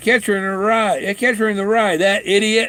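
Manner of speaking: loud, high-pitched, mock blurt. Quoting what the man said loudly when handed the book and credit card. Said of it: "he said in a loud voice".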